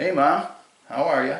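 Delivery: put-on nice loud voice. Arriving to greet his paralyzed mother so she can hear him; nice loud voice. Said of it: "in a nice loud voice".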